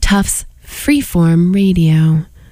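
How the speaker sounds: cheeky, saucy delivery. Radio host giving the station identification, saucy voice. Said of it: "I said that in a very saucy voice".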